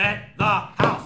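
slow, loud, big selling tout pitch.

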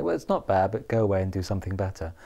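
ordinary talk, nothing marked

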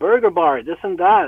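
ordinary delivery

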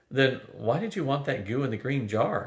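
plain reading voice

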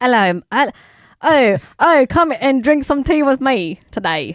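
improvised put-on British accent. Doing impressions for another speaker to guess: british accent impression.

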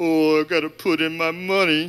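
funny put-on grumpy, grumbling voice. Describing grumpy givers at the offering, imitating one in a funny grumpy voice. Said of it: "I said I was going to do a funny voice".

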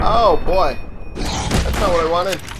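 loud alarmed outburst.

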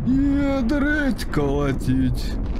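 very high, slow, drawn-out, startled.

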